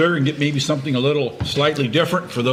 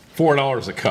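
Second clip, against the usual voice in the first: plain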